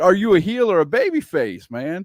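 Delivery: normal talking voice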